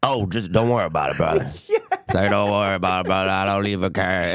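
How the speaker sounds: quick, laid-back, easygoing small-town voice. Describing people in towns in the middle of nowhere, imitating small-town locals. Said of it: "everyone sounds like".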